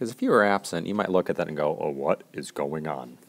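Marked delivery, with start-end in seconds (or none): 1.8-3.2 exaggerated, very low, hushed put-on deep voice. Acting out an absent friend's confused reaction to the diagram, in a deep put-on voice. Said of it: "In that deep of a voice".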